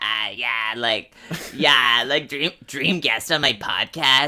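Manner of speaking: husky voice with a heavy rasp.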